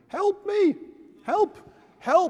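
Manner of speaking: very high, small frightened cries. Telling a joke, voicing the student in the gorilla suit, acting out little cries. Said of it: "little cries of".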